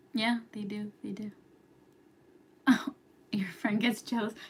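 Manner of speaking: hushed whisper. Reading viewer comments while everyone is sleeping, whispering. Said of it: "I'm whispering".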